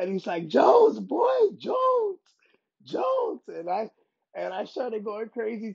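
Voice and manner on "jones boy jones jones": acted, very high, very slow, drawn-out swooping scream. Retelling how Jon Jones greeted them at the gym: imitating Jon Jones screaming. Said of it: "He was screaming".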